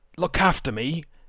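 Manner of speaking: character voice, shouting. Playing a captive dwarf crying out to the party: in-character shout. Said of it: "I just shout".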